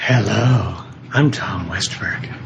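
low, sultry, come-hither delivery. Introducing yourself after two others introduce themselves, in a sultry voice. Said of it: "That's a nice, sultry voice".

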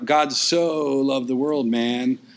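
laid-back, easygoing California surfer-dude drawl. Contrasting a surfer from California quoting the verse: California surfer accent. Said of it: "like this surfer from California who is, you know".

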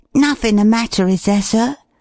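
whispering anxiously. A boy leans over to the frowning man he calls sir: anxious whisper. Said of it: "lean over and whisper anxiously".

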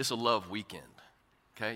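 low, soft voice. A speaker addressing an audience drops into a lowered voice. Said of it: "You see how my voice got lower like that?".

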